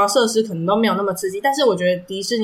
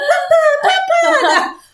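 play-acted giggly calls, very high, very slow, drawn out; 5 dB louder than usual. Retelling how a daughter called her embarrassed dad: imitating a girl laughing while talking. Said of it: "他女儿在旁边笑得超卡笑".

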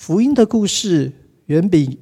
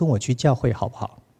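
very quiet, hushed, timid little voice; 6 semitones lower, 7 dB quieter than usual. Retelling asking a roommate through the bathroom door: retelling a very quiet ask. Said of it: "我很小声地说".

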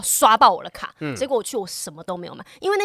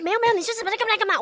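short-tempered, impatient urging at very high pitch; 11 semitones higher than usual. Retelling own words during small arguments: imitating own short-tempered tone. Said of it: "口气就会这样".

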